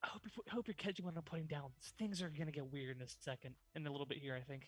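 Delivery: whispered in character. Hugging a character and warning him quietly: whispering in his ear. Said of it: "kinda whisper in his ear".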